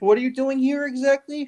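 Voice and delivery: very high, baffled but not hostile. Voicing a man who confronts the newly arrived group, puzzled, not mean. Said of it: "it's actually like not like mean".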